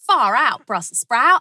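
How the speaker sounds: imitated Australian accent. Repeating an Australian saying just heard, Australian accent imitation. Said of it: "Did I nail it?".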